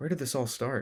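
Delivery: quietly muttered. Reading a story aloud, voicing a character asking a question: under her breath. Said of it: "She asked under her breath".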